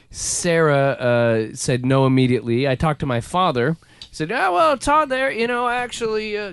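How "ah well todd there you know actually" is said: put-on pitched-up West Virginia accent. Retelling his father's reply about a baby name: imitating his father's voice. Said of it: "'cause that's how my dad sounds".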